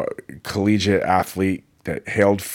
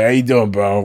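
put-on New York accent; 2 semitones higher, 5 dB louder than usual. Contrasting a 72-year-old's casual greeting with the New York version, New York accent. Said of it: "Very different than the New York".

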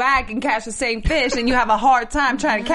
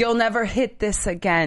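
ordinary delivery

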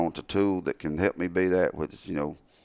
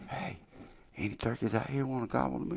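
barely audible, pitched-up whispered call; 7 semitones higher, 11 dB quieter than usual. A turkey caller demonstrates his soft first call to turkeys, in a whisper. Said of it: "I whisper".

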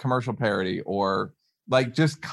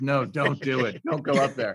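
put-on creepy, eerie horror-movie old-timer voice. Describing a sketch idea, warning someone off like an old man in a horror movie. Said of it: "Like an old man in a horror movie".

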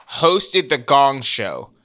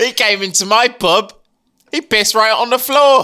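comic, mocking put-on British accent, pitched up; 8 semitones higher, 3 dB louder than usual. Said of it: "I love making fun of British accents".

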